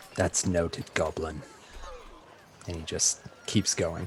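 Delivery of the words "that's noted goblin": muttered whisper, much quieter and lower. A man marching out past someone who bids him bye, whispering under his breath. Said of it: "He whispers under his breath".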